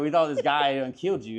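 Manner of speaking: ordinary delivery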